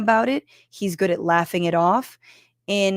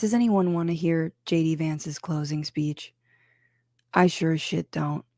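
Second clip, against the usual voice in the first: low voice, speaking quieter; 2 semitones lower, 5 dB quieter than usual. Commenting on the debate while a baby is put down: speaking quietly. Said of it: "I'm speaking quietly 'cause my baby is being put down".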